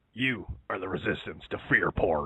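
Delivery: alarmist, fearmongering news broadcaster voice. Performing a requested voice after a listener asks: fear porn Alex Jones voice. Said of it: "doing the fear porn Alex Jones voice".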